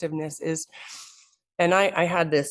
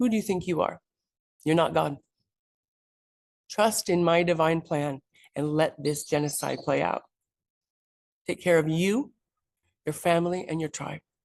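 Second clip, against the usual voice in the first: play-acted, forceful, strong voice of total divine authority. Retelling what a voice said to them in church: imitating a strong voice. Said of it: "strong voice said".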